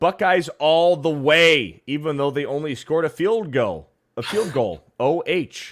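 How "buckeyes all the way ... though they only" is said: plain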